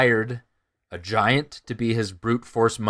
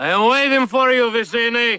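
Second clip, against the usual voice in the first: put-on drunken yelling voice, higher and louder; 13 semitones higher, 6 dB louder than usual. Retelling a scene where a slobbering drunk swordsman yells to nobody: imitating Inigo Montoya yelling drunk. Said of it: "he's yelling to nobody".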